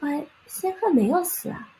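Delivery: put-on small child's voice, very high and very slow. Telling a folk story, voicing a little girl who speaks up: little girl's voice. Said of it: "a little voice comes".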